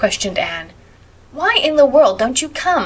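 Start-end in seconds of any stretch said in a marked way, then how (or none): 1.3-2.9 high, insistent, demanding voice. Stella, appearing in the doorway, calls to the two girls; demanding. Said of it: "demanded Stella".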